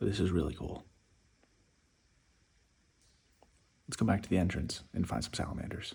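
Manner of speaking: whispered throughout, quiet talking. Exploring a cave alone, looking for salamanders: whispering. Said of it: "I feel like I have to whisper".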